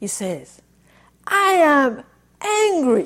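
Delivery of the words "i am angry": huge, resounding, booming voice, acted out. Recalling a little man who suddenly spoke out: imitating a big voice. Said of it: "he says with this really big voice".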